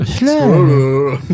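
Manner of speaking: loud mock Japanese accent on squirrel. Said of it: "Say squirrel".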